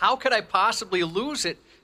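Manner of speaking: high, baffled, frustrated, bewildered outburst. Imitating a colleague who has lost his news papers: imitating bewildered frustration. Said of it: "there's bewilderment. Like".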